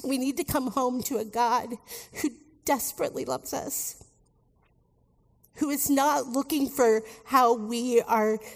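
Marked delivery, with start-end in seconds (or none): 0.0-4.0 emotional, tearful, voice choking up near tears. Speaking to 'my friends', about to cry. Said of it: "oh, I'm going to cry".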